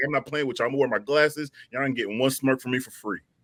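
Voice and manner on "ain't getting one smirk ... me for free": ordinary talk, nothing marked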